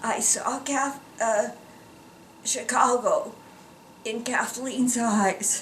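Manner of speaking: soft, tearful crying, voice cracking and breaking. Speaker recalling coming back to Chicago to see the girls, crying, voice breaking. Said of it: "know why I'm just crying".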